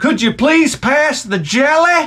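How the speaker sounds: very high, squeaky country-bumpkin voice. Retelling a commercial where the hick answers: imitating a hick. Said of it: "the hick is like".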